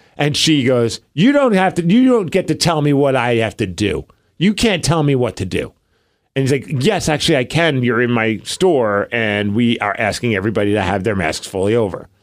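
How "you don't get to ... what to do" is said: indignant, defiant, annoyed tone with swooping pitch. Retelling a woman refusing a store's mask request: imitating someone getting annoyed. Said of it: "she just starts like getting all annoyed".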